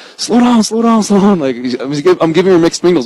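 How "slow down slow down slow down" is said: put-on high-pitched shouting, words repeated. Retelling what gets yelled next at the same player: imitating yelling at a player. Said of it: "And then I'm yelling".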